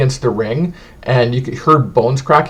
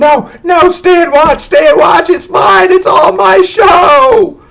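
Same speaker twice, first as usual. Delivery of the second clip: very high, shrill, drawn-out screaming; 7 dB louder than usual. As the front row files out after the show, the conductor is screaming. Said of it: "the conductor starts screaming".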